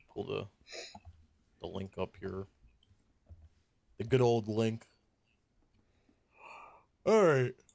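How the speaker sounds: talking through a yawn. Host pulls up a link for the server shutdowns segment, yawning. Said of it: "So sorry I'm yawning".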